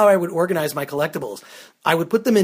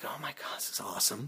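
mock hushed, breathy, aroused whisper of delight; 3 semitones lower, 18 dB quieter than usual. Describing himself with his laptop, looking at neat pictures; mock aroused excitement. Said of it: "and I'm feeling aroused".

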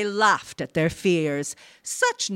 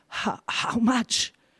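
stammering, horrified, much higher pitch; 4 semitones higher than usual. Uriah, told his son had insurance, asks back; stammering, horrified. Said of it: "Uriah stammered, horrified".

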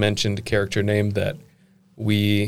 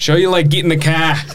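very loud, high-pitched, full-on Australian accent; 8 semitones higher, 8 dB louder than usual. Asked on a podcast to use a word in a sentence, in an australian accent. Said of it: "In an Australian accent".

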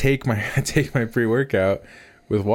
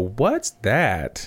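put-on tiny, really little small child voice. Retelling a voice heard from under the garage, in a really little voice. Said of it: "really little voice go".

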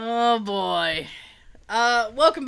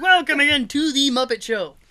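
frog puppet announcer voice; 3 semitones higher than usual. Opening the episode with the intro in the style of Kermit the Frog. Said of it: "the Kermit the Frog intro".

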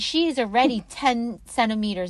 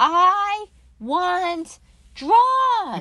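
acted out, full-out high, loud scream; 9 semitones higher, 5 dB louder than usual. Recalling being told to push in the delivery room, reenacting her own scream. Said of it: "And I literally screamed".

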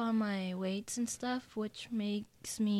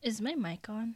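barely audible, very soft voice. Opening the show's promotions, the host checks whether the mic is on: really quiet. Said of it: "You're just really quiet".

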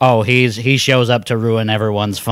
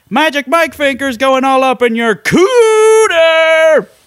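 very high, slow celebratory shout, 'cooter' stretched; 5 dB louder than usual. Retelling a show host celebrating a fixed game: imitating Arin shouting. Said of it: "at one point he just shouts".

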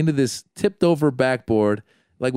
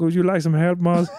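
put-on elderly Indian gentleman's accent; 4 semitones higher than usual. Retelling how a woman's elderly father offered help, imitating an elderly Indian man. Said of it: "Hear the voice one more time".

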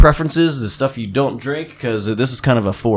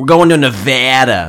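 loud, drawn-out put-on Boston accent; 5 dB louder than usual. Showing how saying the state's name sounds: put-on Boston accent. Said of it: "Or a Boston accent or something like".

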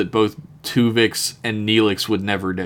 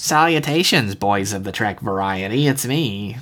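put-on small, tiny, cute and nasal little boy voice. Imitating the sender of an email reading its greeting: Todd Howard voice. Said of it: "little cutie boy voice for a man".

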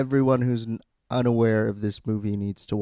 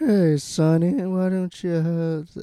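breathy put-on pimp voice, higher pitch; 7 semitones higher than usual. Retelling a film scene where a pimp talks to Sonny: breathy Acid Yellow voice. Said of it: "it's breathy".

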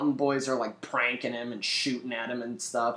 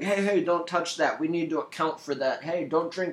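grumbling, complaining, irritated nagging; 3 semitones higher than usual. Retelling Ben scolding drunk soldiers: imitating Ben complaining. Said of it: "running around bitching at everybody".

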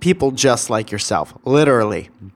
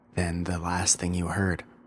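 talking very quietly, low and soft; 6 semitones lower, 12 dB quieter than usual. Explaining that the last episode's intro was too quiet: talking very quietly. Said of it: "I'm talking very low".

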